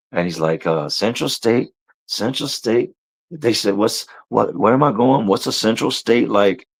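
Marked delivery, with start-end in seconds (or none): 0.8-2.9 put-on deranged, wild, unhinged crazy voice. Retelling how a rocking man talked: imitating the craziest voice. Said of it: "he's talking in the craziest voice".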